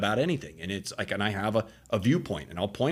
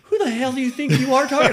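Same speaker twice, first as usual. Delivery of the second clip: play-acted unhinged yell, very high, very loud and shrill; 10 dB louder than usual. Retelling a mom's reaction to teasing: imitating an unhinged outburst. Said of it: "my mom comes unhinged".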